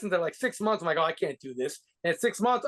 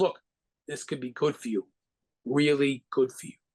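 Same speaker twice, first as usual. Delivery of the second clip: put-on muttered under-breath aside, lower; 4 semitones lower than usual. Retelling a phone call where a man pulled the phone away; under his breath. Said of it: "He says under his breath".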